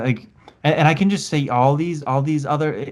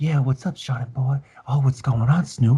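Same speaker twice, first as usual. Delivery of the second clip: put-on ASMR-style whisper. Imagining two celebrities doing asmr together, mock asmr whisper. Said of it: "they could do A S M R together?".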